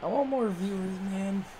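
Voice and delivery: soft, downcast, depressed-sounding voice. Calling the plays of a football game, sounding depressed. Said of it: "Now [name] sounds depressed".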